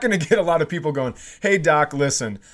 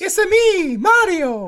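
very high-pitched character voice; 3 dB louder than usual. Joking about a possible AGT judge, the speaker does a high-pitched Mario impression. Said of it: "It was just high pitched".

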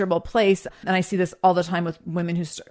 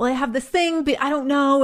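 put-on timid, shrinking, small, high little-girl voice; 7 semitones higher than usual. Describing how women make themselves small, imitating a timid girlish voice. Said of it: "weird and awkward and like little girlish about it".

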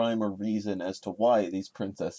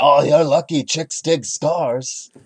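loud, slow, boastful put-on character voice. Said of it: "he would say".

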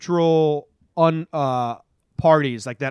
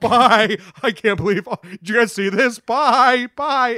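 high, mock giggling through the words, self-amused; 8 semitones higher, 3 dB louder than usual. Joining in describing a man amused at himself, imitating someone laughing to himself. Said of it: "starts laughing and smiling to himself like".

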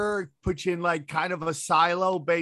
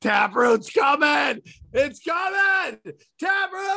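mock excited yell, higher and louder; 9 semitones higher, 4 dB louder than usual. Recalling the crowd's countdown hype, acting out their own excited yelling. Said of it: "I'm just yelling and screaming".

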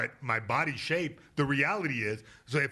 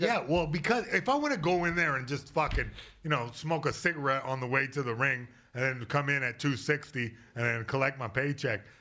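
usual speaking voice

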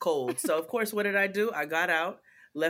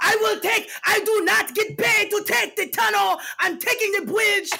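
mock screaming, much higher and louder; 8 dB louder than usual. Retelling what a man screamed when asked to take the tunnel, retelling a man screaming. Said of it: "This man starts screaming at me".

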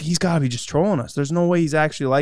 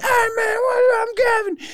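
mock very high, hyped-up, energetic yelling. Retelling how a newcomer greeted them on arrival: imitating someone yelling. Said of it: "he's just yelling".

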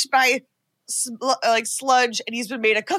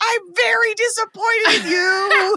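very slow, high, drawn-out, deliberate acted scream; 9 semitones higher than usual. Retelling a movie scene where a dentist screams at his wife: imitating someone screaming. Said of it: "he screams at his wife".

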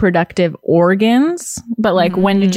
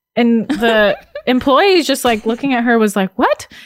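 ordinary delivery

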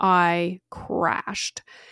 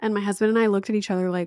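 ordinary talk

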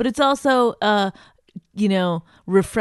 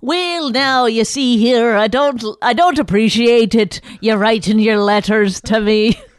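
put-on angry Irish woman voice, louder; 3 semitones higher, 6 dB louder than usual. Improvising a requested character, an Irish lady podcaster mad at her listeners: angry Irish lady voice. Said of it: "You're an Irish lady who does a podcast and is mad at her listeners".

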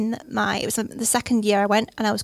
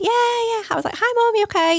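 bright, high, breezy, happy tone; 13 semitones higher, 4 dB louder than usual. Retelling answering a call from mom, re-enacting sounding all happy. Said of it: "I was all like happy".

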